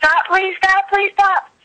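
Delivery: high, pleading mock scream.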